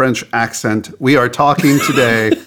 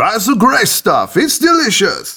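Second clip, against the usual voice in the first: put-on French accent, high and sing-song; 10 semitones higher than usual. The show host readies a french accent before opening the show, in a put-on french accent. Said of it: "let me get my French accent ready".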